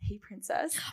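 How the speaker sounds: imitated whisper. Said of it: "somebody whispers".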